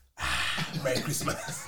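low, slow voice with laughing.

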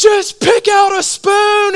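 very high, fed-up, drawn-out screaming yell. Recounting the wife with a daughter nonstop demanding a spoon: imitating wife screaming. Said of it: "she starts screaming at her daughter".

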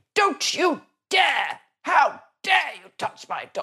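posh, high-pitched telling-off. Speaker retells shouting at a man threatening her dog, as Penelope Keith. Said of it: "shouted in a very, very well-to-do voice".

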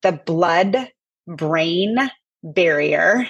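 slow, deliberate, word-by-word delivery. Explaining a medical condition he cannot say fast, speaking slowly. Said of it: "I need to go slow".

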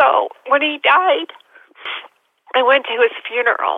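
tearful speech, talking through crying. Recounting going to a father's funeral, crying while speaking. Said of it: "I'm sorry, I'm crying".

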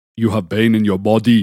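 put-on Ghanaian accent, firm and outright. Asked to repeat Sam's words the way he says them, imitating Sam's Ghanaian accent. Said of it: "say how he says it with his accent".

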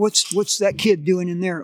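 ordinary delivery

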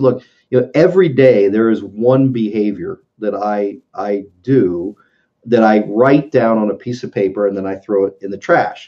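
ordinary delivery

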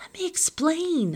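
very high, shrill, yelled-out shout. Narrator, face scratched by a screaming woman, shouts to be heard: shouting. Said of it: "I shout".

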